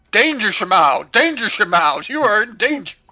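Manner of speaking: mechanical, robotic, alarm-like robot voice. Describing the warning voice in their head canon, in a robot voice. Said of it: "it sounds like a robot, and it's going".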